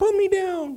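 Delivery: small, tiny, very high-pitched little voice. Retelling a little face on a wax candle speaking to them, in a tiny little voice. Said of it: "I hear this little voice say".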